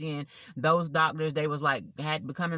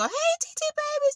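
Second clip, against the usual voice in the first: put-on baby-talk voice, way up high. Showing how one talks to a nephew, niece or dog: high-pitched baby-talk voice. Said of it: "a high pitch voice".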